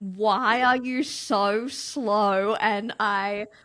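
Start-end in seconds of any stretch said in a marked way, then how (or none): 0.0-2.5 put-on seething impatience, very slow and drawn out. Retelling an irritated moment on a boat: imitating fuming irritation. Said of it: "when you're just fuming inside".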